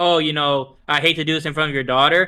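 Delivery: ordinary talk, nothing marked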